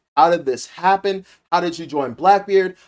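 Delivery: ordinary talk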